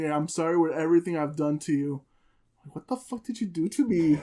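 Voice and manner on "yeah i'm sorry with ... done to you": mock tearful voice, lower. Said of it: "started crying".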